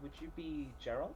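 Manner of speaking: put-on sugary sweetness. Retelling approaching a man reading a book, the speaker asks his name in a put-on sweet voice. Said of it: "in as sweet a voice as I can manage".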